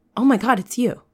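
audible emotional exclamation, not crying. Narrating the moment emotions overtake Marin, an audible emotional exclamation. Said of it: "you like hear an audible like".

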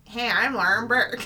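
put-on American accent. Asked to do the host in an American accent, imitating Lauren Burke's American accent. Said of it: "do an American accent".

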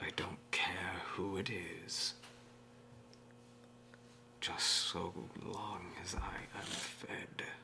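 very slow, breathy whisper, every word drawn out. Voicing a presence that speaks in the player's father's voice: voice of the father Nord. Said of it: "The voice changes to your father's voice".

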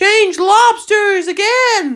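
high, full-throated yell at the top of the lungs. The Gryphon calls out the next step, yelling at the top of his voice. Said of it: "yelled the Gryphon at the top of his voice".

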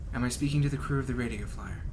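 even, inflectionless, tidy flat monotone. Voicing a corporate contact hailing the crew by direct message, in a flat monotone voice. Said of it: "speaks in a very like monotone, clean sort of voice".

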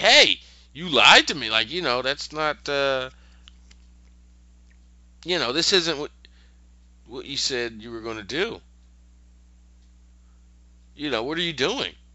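put-on angry, pissed-off, indignant tone. Retelling a show scene where a girl finds she was tricked: imitating a pissed-off character. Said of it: "and she's pissed, like".

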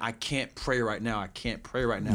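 ordinary talk

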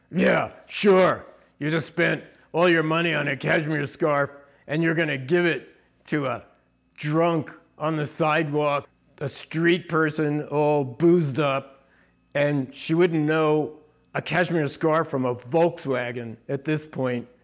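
really rough, coarse, rough-edged voice. Retelling the voice from the other shoulder answering back, in a really rough voice. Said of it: "really rough voice".

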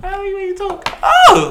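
put-on high, giggly girly voice.

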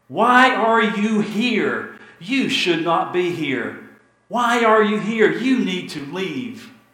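shrill, high, loud shouting. Retelling a story, the speaker acts out a boy in a manger yelling at his parents: Owen Meany yelling. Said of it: "he yells to them".

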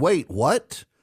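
ordinary delivery

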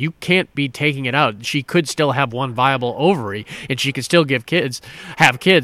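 ordinary talk

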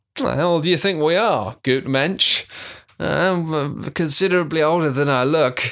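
put-on lecherous, leering voice, drawn-out "I'm". Co-host reading a listener's question aloud on the podcast, in a leering voice. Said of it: "I love that you're doing this leering voice".

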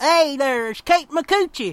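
little hillbilly twang. Joking about how a name sounds: little hillbilly twang. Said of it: "if you just say it with a little hillbilly twang".

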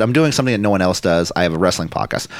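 ordinary talk

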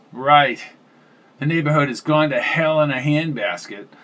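plain

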